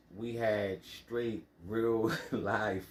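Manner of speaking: slow, laughing through the words. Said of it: "I'm laughing".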